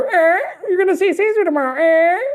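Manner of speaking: very high little bird, parrot voice. Speaker to Mister Caesar, quoting the parrots at his window, imitating the parrots. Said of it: "parrots fly into my window and they go".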